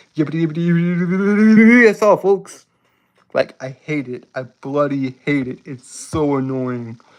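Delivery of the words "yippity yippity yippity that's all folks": classic cartoon pig delivery. Explaining a speech impediment, then doing a quick Porky Pig voice. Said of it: "I feel like Porky Pig".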